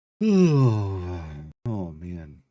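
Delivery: loud yawning, words stretched, "oh" drawn out. Waiting through game loading screens, yawning. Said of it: "I don't know why I'm yawning".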